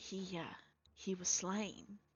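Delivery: confiding, hushed half-whisper. Telling a story, a woman leans close to the listener and half-whispers. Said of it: "she whispers to you".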